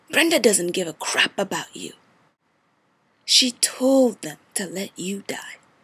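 enraged, bitter, furious delivery. In an audition monologue, an ex-wife confronts her former husband: furious wronged ex-wife. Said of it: "I was your wife. / I was your wife. / but now I'm going to get even. / Hello this here is my first monologue ever".

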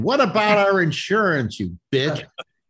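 loud yell, high-pitched and furious.

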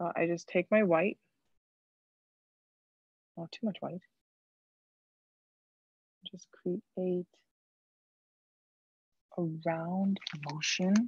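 whispering. Explaining a highlight painting step to viewers: whispering. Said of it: "I don't know why I'm whispering".

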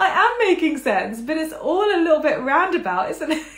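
shrill, very high, loud self-amused laughter. Explaining a history point, catching the rambling, laughing at herself. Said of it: "I'm laughing at myself".

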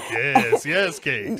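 booming with high glee. Teasing another speaker about getting older: gleeful Ghost of Christmas Future voice. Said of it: "the ghost of Christmas future, just being like".

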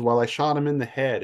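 put-on thick Tennessee accent. Retelling how a man answered where he shot the bird, in a thick Tennessean accent. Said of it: "in a very rich, thick Tennessean accent".

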